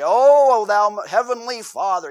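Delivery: very loud, very slow, booming, drawn-out pious intonation. Imitating how people sound when praying in public at church: pious praying voice. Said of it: "the whole voice changes".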